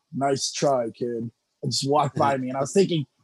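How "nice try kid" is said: intimidating, threatening delivery. Retell what he said walking by after you got hit, in Low Ki's intimidating low voice. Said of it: "It's real intimidating low voice".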